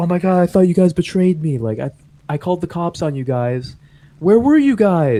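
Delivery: frantic outburst sounding betrayed. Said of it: "and she's like".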